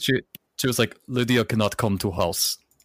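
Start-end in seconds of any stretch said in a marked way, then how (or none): 1.1-2.6 put-on Eastern European grandmother accent. Retelling what Lydia's aunt Marla said about Lydia, Marla's Eastern European grandmother accent. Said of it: "She sounded like an Eastern European grandmother".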